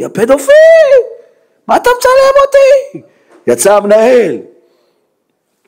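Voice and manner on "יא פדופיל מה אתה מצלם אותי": high, loud, furious shout. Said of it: "צריך לצעוק לי".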